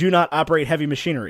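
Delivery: ordinary delivery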